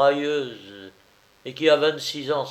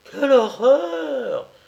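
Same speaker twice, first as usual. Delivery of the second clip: shrill, loud, high cry, all as one voice; 14 semitones higher, 6 dB louder than usual. Narrator reads the Snobinettes' chorus reacting together, exclaiming in unison. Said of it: "S'exclama avec ensemble".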